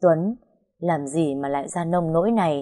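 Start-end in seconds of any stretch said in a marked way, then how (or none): none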